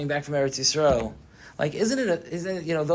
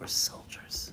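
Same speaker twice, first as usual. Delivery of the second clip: quiet, soft, breathy, hushed whisper. Retelling words said to a wife after her father died: imitating a whisper. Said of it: "whispered to her".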